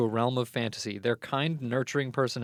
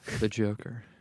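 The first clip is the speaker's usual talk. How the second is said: acted seductive villain-style voice; 3 semitones lower, 4 dB quieter than usual. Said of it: "It's really sexual".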